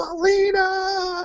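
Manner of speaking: imitated scream. Retelling hearing self in a match clip: imitating own scream. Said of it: "I heard myself scream over everybody else".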